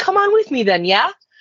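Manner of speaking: put-on inflected Wisconsin accent. Retelling what you said to a client, speak in a Wisconsin accent with inflection. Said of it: "I some influx in my voice".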